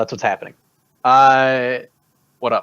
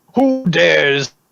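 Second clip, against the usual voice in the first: loud shouting dragon voice; 4 semitones higher, 4 dB louder than usual. Game master voicing a dragon as it draws close: shouting dragon voice. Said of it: "Dragon shouts out".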